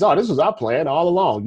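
ordinary talk

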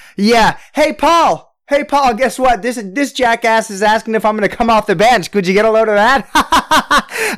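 put-on mocking laugh. Retelling how Mello answered a reporter, the speaker imitates Mello laughing mockingly. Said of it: "So he was just laughing at him".

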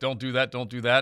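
ordinary talk, nothing marked

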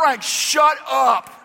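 loud, slow, high-pitched yell.

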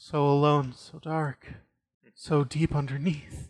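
quiet, soft, weeping, crying voice. Voicing a crying cave spirit curled up in a cave: softly crying. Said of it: "you hear her softly crying and saying".

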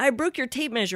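mock sobbing. Retelling the reply given when Carol asked what was happening, acting out bursting into tears. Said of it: "I burst into tears".

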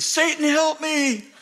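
put-on, full-on, shrill, very high screaming cry. Recounting the guy he laid hands on crying out, retelling a scream. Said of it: "and he starts screaming".

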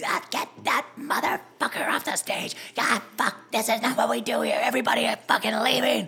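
put-on furious old woman ranting. Retelling an old lady's complaint about a comedian: imitating an angry old lady. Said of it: "You sound just like her".

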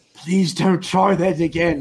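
quiet whisper. Voicing Reggie warning a captive in the elevator: whispering threat. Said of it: "Reggie whispers in your ear".

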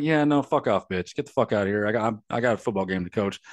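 put-on dismissive, brushing-off tone. Retelling the coach's answer to a reporter: imitating a dismissive retort. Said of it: "he's like".

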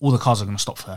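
normal talking voice

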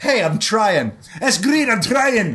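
put-on high Scottish accent. Quoting a Scottish person in a dress: put-on Scottish accent.

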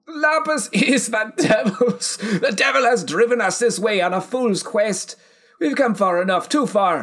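very high cry, grief turning to fury. Narrating a story, voicing Gormgull's reply: grief turning into rage. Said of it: "Gormgull's grief flew into rage".

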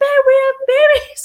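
put-on very high-pitched, loud, girlish screaming shriek. Telling a story, acting out what a screaming man said: imitating someone screaming. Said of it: "he's just screaming".

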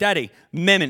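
put-on choppy, broken caveman-style child baby talk. Retelling what a child said downstairs, imitating caveman-like talk. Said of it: "like he's a caveman almost".

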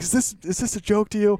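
play-acted very high, shrill, straight-faced angry shout. Retelling a teammate's joke at practice: imitating a mock-angry yell. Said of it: "He's like".

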